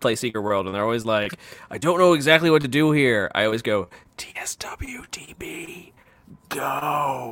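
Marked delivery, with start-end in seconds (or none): 4.2-7.3 very creepy put-on voice, much quieter. Telling what the speaker always says to confused Secret World players, in a super creepy voice. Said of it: "Like in a super creepy voice".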